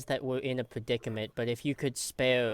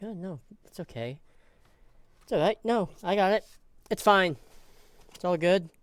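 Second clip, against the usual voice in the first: dry, mocking, sarcastic, pitched up; 6 semitones higher than usual. Voicing a doctor character's legendary mannerisms: sarcastic bedside manner. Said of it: "Very sarcastic bedside manner".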